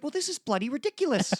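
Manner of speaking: very high, small, shrinking little voice. Showing a listener your impression as he's getting small: Jordan Peterson impression, as if shrinking. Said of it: "It sounds like he's shrinking".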